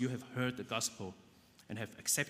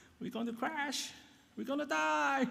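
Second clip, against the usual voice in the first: very high, panicky, put-on crying voice. Acting out people in panic mode on a boat they fear will sink: put-on crying voice. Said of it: "I wish I can do a better cry voice".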